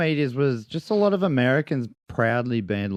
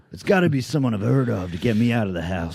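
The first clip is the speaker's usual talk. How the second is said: casual, put-on American accent; 3 semitones lower than usual. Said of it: "join me in an American accent".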